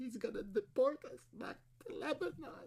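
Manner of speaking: very quiet, weepy, barely audible crying. In a skit, speaking to a partner who comforts them, crying. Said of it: "Don't cry".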